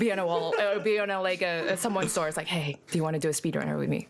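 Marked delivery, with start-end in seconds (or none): 2.5-4.1 put-on creepy voice and tone. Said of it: "in a creepy way".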